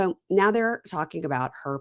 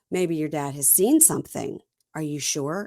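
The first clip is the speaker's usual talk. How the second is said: plain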